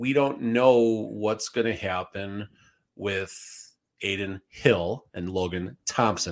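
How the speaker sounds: very slow, careful, drawn out word by word. A commentator names two goalies whose names he keeps getting wrong: said slowly. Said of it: "I said that slowly".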